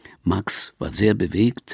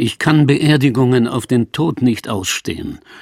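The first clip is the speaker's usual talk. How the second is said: ordinary talk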